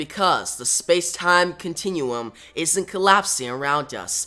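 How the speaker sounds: plain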